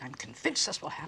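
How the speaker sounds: ordinary talk, nothing marked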